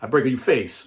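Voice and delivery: put-on loud, thick Italian accent with broken English. Quoting the speaker's grandfather, who spoke broken English, in a heavy Italian accent. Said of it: "with a heavy Italian accent".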